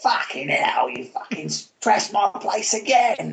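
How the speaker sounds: put-on Cockney accent. Imitating a game character, Mister Toad: Cockney Mister Toad voice. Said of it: "obviously a sort of a Cockney, um, sort of character".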